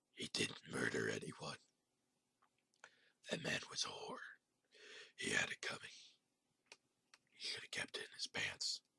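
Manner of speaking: low, deep, guttural, throaty whisper. Voicing a uniformed shadow figure speaking from a tape: deep, throaty voice. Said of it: "In a deep, throaty voice".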